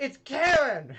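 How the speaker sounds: very loud, high-pitched shout in character voice. Voicing a cloaked character who finally reveals her name: shouting in character. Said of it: "She finally just shouts".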